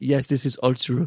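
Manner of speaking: put-on heavy, thick foreign accent in English. Retelling Zolt, the sound guy on The Room, confirming a story, in Zolt's thick accent. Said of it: "he has a really thick accent".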